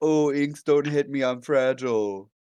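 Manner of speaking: mock, sneering, slow taunting whine. Arguing over who got hurt, the speaker mimics the other person in a mocking imitation. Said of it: "You were the one who's like".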